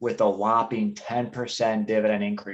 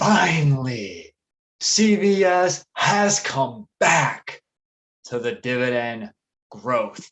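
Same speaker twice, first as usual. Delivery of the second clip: put-on big wrestling-star announcer voice; 4 dB louder than usual. Presenting the fourth item in a video with a co-host, doing a The Rock impression. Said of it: "my best rock impersonation".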